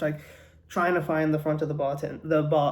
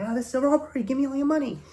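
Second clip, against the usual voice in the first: shrill, very high-pitched yell; 9 semitones higher than usual. Retelling a joke where a robber bursts into a bar: imitating a robber yelling. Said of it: "he's yelling".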